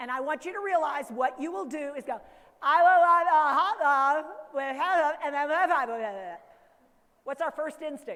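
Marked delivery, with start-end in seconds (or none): 2.6-6.4 very loud, emphatic, every word hammered. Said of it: "Say it again and louder with emphasis".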